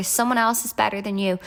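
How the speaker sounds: plain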